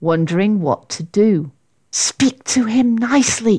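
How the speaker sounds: plain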